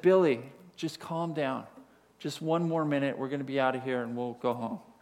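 calm, soothing, soft, quiet reassuring voice. Retelling how a dad spoke to his screaming kid, in a quiet voice. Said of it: "the dad quietly says".

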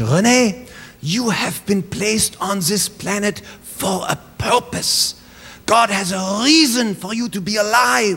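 put-on Swiss accent in English. Speaker quoting what her single mom told her over and over: mother's swiss accent. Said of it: "she'd say in her Swiss accent in English".

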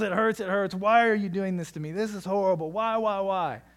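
put-on agonized, tortured child's screaming yell. Retelling how a six-year-old daughter yells while her hair is brushed: imitating a child screaming in agony. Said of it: "she screams in agony and she questions the love that you have for her and yells".

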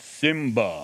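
tentative, trial-run famous film-star voice. Showing the congregation an impression of a famous voice: James Earl Jones impression. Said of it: "if I was to say to you in my best".

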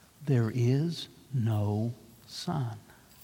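hushed, deep, very soft, slow, drawn-out voice. Reading a story, the witch repeats her claim to her listeners: softer, deeper voice. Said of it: "She repeated in a softer and deeper voice".

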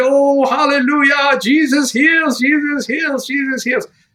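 put-on very high-pitched, exuberant, joyful voice. Retelling hearing of a healed liver, reenacted excitement. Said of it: "So on this side, I was excited".

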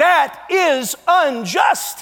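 mock, half-voiced, high-pitched crying-out outburst. Imagining standing at the back of the courtroom, screaming at the top of lungs. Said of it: "I'm screaming at the top of my lungs".

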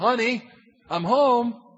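loving, affectionate voice. Acting out a wife greeting her husband at the door: loving greeting. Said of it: "with Christ exalting love, with this tone says".

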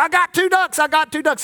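high called-out hollering. Retelling a rodeo act where the performer shouts about his ducks: imitating someone hollering. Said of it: "he'd holler".

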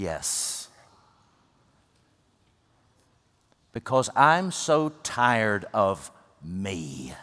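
low, worn-out, exhausted, very weary voice. Speaker quotes a woman's answer to his question, imitating a very weary reply. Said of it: "she said very wearily".

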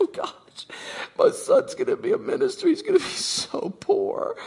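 very high, slow, drawn-out tearful crying wail. Retelling mom's reaction to hearing her son will be a minister: imitating mom crying. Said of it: "She started crying".

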